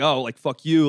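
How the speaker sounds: put-on swaggering tough-guy voice, puffed-up and defiant. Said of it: "a puff in your chest out type of thing".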